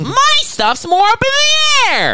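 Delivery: slow, very high sing-song lilt, swooping and drawn out. Quoting a scene from a show just watched: Claire Danes impression. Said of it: "you sound just like her".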